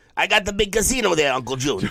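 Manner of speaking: very high character voice, pitched way up. Doing a line in the voice of Uncle June. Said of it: "my dad talked like Uncle June".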